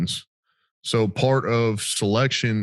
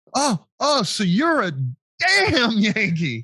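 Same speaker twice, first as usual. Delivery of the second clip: mock loud yell, much higher pitch; 12 semitones higher than usual. Retelling what a man yelled after turning around: retelling a loud shout. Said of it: "he goes loud as fuck".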